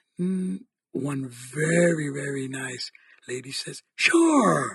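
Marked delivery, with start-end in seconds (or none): 4.0-4.8 loud, joyful, drawn-out delighted voice. Retelling a nice lady's answer to packing her bag: imitating a loud joyful reply. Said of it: "in a very l-, loud, joyful thing".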